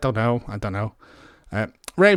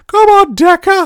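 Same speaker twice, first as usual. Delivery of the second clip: very high, as loud as possible cartoon scream; 11 dB louder than usual. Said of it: "a really loud Mickey Mouse voice".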